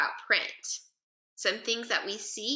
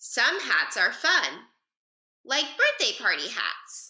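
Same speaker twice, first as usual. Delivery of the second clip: brief pause between fun and like. Reading a sentence aloud to model a comma, short pause after fun. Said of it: "Did you see how I paused between fun and the word like?".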